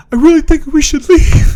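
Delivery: put-on quavering, very high kid voice. Retelling how a character said they should leave: imitating a trembling voice. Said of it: "voice trembled and everything".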